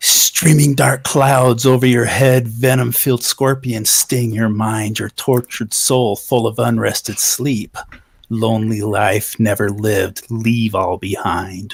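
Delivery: hushed whisper. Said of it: "start whispering to it".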